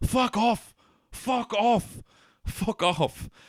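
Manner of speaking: very high, very slow, drawn-out, repeated yelling. Retelling a scene where a man slams the door on the owl man, retelling a shout. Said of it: "he keeps shouting".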